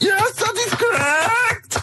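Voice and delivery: very high, slow, put-on German accent. In a comedy sketch, an actress answers a question in a Nazi accent. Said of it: "you're doing the uh, Nazi accent very well".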